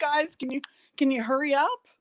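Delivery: urgent call-out, kept small. Retelling an hour-long photo shoot with mice thrown around: imitating own past scream.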